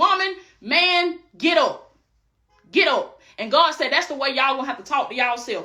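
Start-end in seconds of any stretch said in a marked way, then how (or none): 0.0-3.2 put-on powerful voice, very slow and drawn-out. Speaker acting out God speaking to the listeners, in a strong voice. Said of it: "that strong voice".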